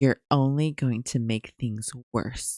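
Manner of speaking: put-on whispering voice. Retelling a character's warning to another character: imitating someone whispering. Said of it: "But she whispers".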